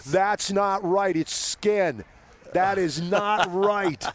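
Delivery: high, drawn-out yelling. Recalling a quiz question on screen, acting out their own reaction: retelling shouting at the screen. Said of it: "I'm screaming at the screen going".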